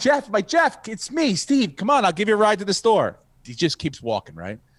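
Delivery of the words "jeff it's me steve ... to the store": mock, high, called-out shout. Retelling pulling his car over beside a man walking, the speaker retells yelling to him. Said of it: "and I'm like yelling".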